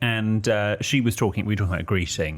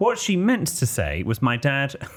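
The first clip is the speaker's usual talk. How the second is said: ordinary delivery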